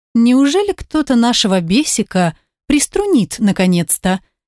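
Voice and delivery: ordinary delivery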